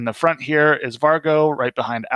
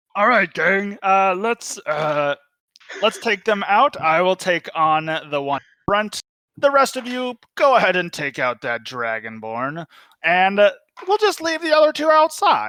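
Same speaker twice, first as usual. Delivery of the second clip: high, swooping, sing-song puppet-like voice; 6 semitones higher than usual. Game master voicing a character rallying the gang to attack, Kermit and Jar Jar Binks mix. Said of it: "a mix between Kermit the Frog and Jar Jar Binks".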